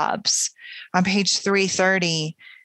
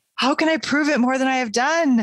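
distracted, high, tender crying out; 6 semitones higher than usual. A woman answers the man who asks her to prove her love, crying out in tender distraction. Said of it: "she cried in a distraction of tenderness".

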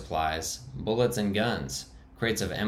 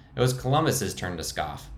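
usual speaking voice

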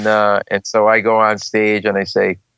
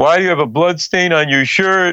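mock screaming, high-pitched; 8 semitones higher than usual. Speaker retells the firm's senior partner questioning them: imitating the senior partner screaming. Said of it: "He's screaming at me like your dad".

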